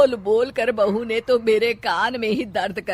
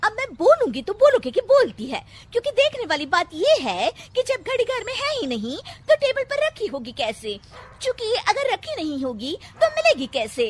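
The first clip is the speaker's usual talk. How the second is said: put-on chattering voice, much higher; 11 semitones higher than usual. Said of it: "उसे वो character इतना पसंद आ जाता है कि उसे खुद पता नहीं चलता कि कब वो खुद [name] की तरह बात करने लग जाती है। / उसे वो कैरेक्टर इतना पसंद आ जाता है कि उसे खुद पता नहीं चलता कि कब वो खुद [name] की तरह ब".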